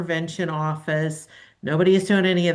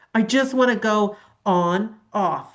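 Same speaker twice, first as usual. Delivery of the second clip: put-on ranting voice, higher pitch; 3 semitones higher than usual. Retelling an Instagram meme video: imitating a guy from a meme video. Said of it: "It was a guy going".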